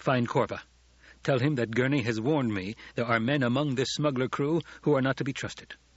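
ordinary delivery

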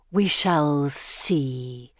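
sibilant, snake-like hissing through the words. Narrator reads the Gorgon answering Pippa, hissing. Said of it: "the Gorgon hisses".

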